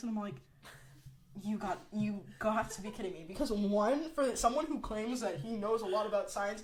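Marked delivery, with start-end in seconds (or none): none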